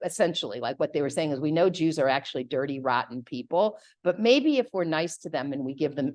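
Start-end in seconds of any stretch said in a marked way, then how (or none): none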